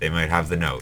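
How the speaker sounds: ordinary delivery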